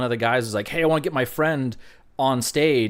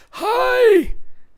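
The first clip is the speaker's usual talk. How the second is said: imitated hoarse, strained voice, much higher, louder; 8 dB louder than usual. Retelling how a young lady came up to them, imitating a lost voice. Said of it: "with that voice?".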